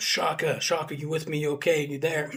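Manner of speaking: urgent voice calling across. Retelling yelling to an injured man after an explosion, retelling a yell. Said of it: "so I'm yelling at him".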